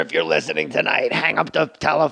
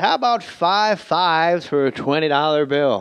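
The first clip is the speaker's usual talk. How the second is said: baseball announcer voice, like calling a ballgame. Retelling a restroom encounter: Vin Scully voice. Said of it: "Vin Scully talks like that all the time".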